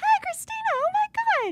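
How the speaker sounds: man's voice pitched very high. Recounting meeting a man who greeted her, the speaker does Mike's very high voice. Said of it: "That's how high his voice was".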